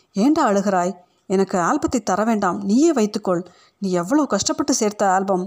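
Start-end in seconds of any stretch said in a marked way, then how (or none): none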